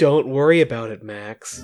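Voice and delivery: fake evil-sounding voice. Retelling what an evil double says to Max: imitating evil Mirror Noah. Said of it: "he's so obviously evil now".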